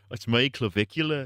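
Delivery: put-on British accent. Doing a bit imagining Clavicular as British: British Clavicular impression. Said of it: "this bit about clavicular if he was British".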